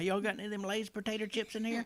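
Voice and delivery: put-on high-pitched country accent, drawled out. Imagining going in there and asking, imitating Abigail's country talk. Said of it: "Are you trying to say she talks country?".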